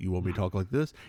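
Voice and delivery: deep, low, dropped-down voice. Retelling being asked to speak lower, answering in a low voice. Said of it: "can you speak in a in a lower voice? And I said like this".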